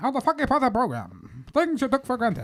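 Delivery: put-on high old-timey announcer. Podcast hosts redoing their show intro, in an old-timey announcer voice. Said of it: "gonna do the old timey voice".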